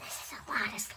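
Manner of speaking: breathy stage whisper with shouted force. Making slime and remarking on how much there is: whisper shout. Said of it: "Why am I whispering it?".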